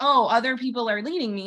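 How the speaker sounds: mildly sarcastic, mocking, poking-fun tone. Quoting a hypothetical person to make a point: sarcastic mock quote. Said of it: "I say that kind of sarcastically".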